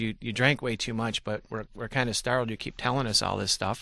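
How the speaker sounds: plain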